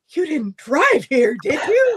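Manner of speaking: high, very loud, alarmed voice. Retelling what the doctor asked with a very alarmed voice: imitating an alarmed doctor. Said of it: "with a very alarmed voice".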